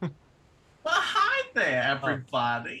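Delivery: very loud, sing-song, swooping put-on Bronx woman accent. Showing the others a requested character voice: Bronx woman voice. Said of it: "Give us an example of that".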